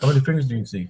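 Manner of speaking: play-acted, high, teasing, laughing-at-you mocking tone. Retelling how a doctor made fun of him: imitating someone mocking. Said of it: "he was laughing at me".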